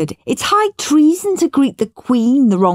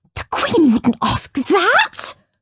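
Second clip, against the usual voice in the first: high, gasped, gasping voice; 8 semitones higher than usual. A boy reacts to another boy's made-up question from the Queen, gasping. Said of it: "gasped Perfect Peter".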